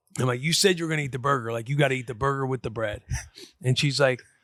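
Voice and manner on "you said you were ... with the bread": put-on annoyed, irritated tone. Retelling telling a daughter to eat the burger: retelling an annoyed rebuke. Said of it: "pissed off".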